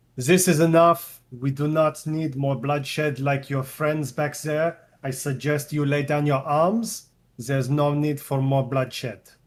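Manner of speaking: loud, firm, stern, commanding voice. A player speaks as Vesmir, stepping forward, in a loud, stern voice. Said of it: "he will say in a loud, stern voice".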